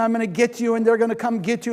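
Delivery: screaming angrily. Telling a story, acting out a man storming off, retelling a scream. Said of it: "he storms off and he's screaming".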